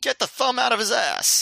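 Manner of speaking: sudden high shout. Retelling a wrestling spot, imitating Sinclair yelling. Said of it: "and then Sinclair yells".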